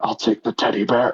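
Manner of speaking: small, little, despairing whisper. Game master narrating a character's choice between two options, in a super quiet little whisper. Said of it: "a super quiet little whisper".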